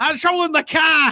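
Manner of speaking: imitated Boston accent. Mocking a coach's recruiting pitch, put-on Boston accent. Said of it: "what's another like Bostonian phrase?".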